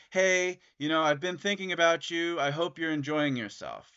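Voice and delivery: ordinary talk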